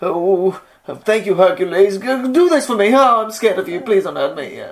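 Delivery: scared king voice. Trying out a voice for a king who fears Hercules, in a scared king voice. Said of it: "really kind of scared of Hercules".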